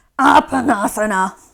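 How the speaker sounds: cranky, grumpy, grouchy delivery. Leading a pose, showing the group how to say its name cranky and grumpy. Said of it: "say it like you're a crank".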